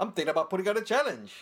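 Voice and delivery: clumsy put-on Irish accent. Quoting a man who did a challenge every month for a year: bad Irish accent. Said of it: "That's a bad Irish accent".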